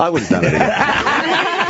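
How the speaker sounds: laughing while speaking, high-pitched.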